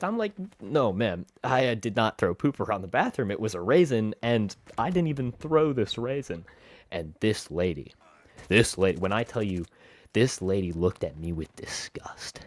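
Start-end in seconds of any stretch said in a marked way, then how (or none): none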